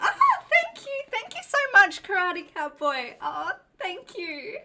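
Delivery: bubbly gushing, very high and swooping. Streamer demonstrating how they would thank a viewer if they were more bubbly: bubbly. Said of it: "if I was to be more bubbly".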